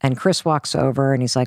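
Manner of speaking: ordinary talk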